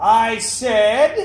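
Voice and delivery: loud voice.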